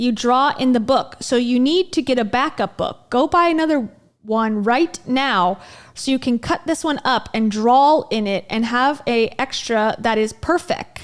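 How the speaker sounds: plain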